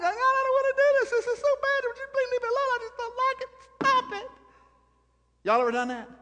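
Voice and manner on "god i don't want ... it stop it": play-acted very high, crying babyish whine. Speaker acts out someone answering god, imitating crying like a baby. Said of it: "you're crying like a baby going".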